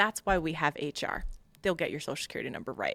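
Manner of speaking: ordinary delivery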